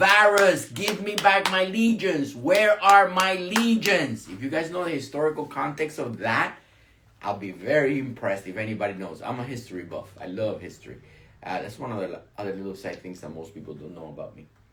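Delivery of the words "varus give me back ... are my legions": play-acted scream, high, loud, drawn out. Retelling a famous line from a Roman emperor: imitating an emperor screaming. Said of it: "And he kept screaming".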